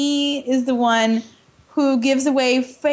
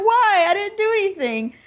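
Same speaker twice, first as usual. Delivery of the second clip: mock weeping, high, pitiful, pleading tone; 7 semitones higher than usual. Retelling how Theon starts to cry after a threat: imitating Theon Greyjoy crying. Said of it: "starts to cry, and it's like".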